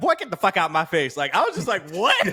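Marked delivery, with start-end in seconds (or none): 0.0-1.2 light Southern twang throughout. Praising Hailee Steinfeld's movie role, Hailee Steinfeld southern twang. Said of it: "her like little southern twang".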